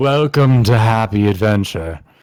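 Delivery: menacing, threatening tone. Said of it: "I don't know how you say it menacingly".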